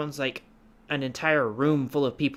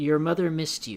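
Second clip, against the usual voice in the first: layered chorus of whispering voices; 3 semitones higher than usual. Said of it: "You hear".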